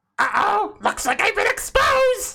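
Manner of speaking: put-on evil scientist cartoon villain voice. Playing a guest exposed as an evil scientist: evil scientist voice. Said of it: "sound like an evil scientist".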